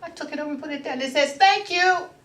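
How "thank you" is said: tiny, cute, high-pitched little voice. Retelling what a little rock said, in a cute little voice. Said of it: "Had a cute little voice".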